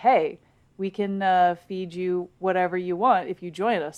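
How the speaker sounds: ordinary talk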